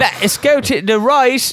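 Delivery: put-on English accent. Co-hosts say he is doing an accent and he insists, put-on English accent. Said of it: "I don't think they sound like that".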